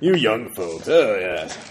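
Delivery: put-on grumpy old man voice.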